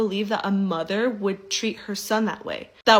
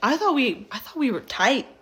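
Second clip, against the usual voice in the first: ordinary delivery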